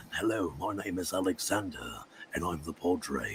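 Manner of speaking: very low, hushed, dark English voice. Recalling doing the Padre for them for the first time, dark Englishman voice. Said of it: "like a dark Englishman".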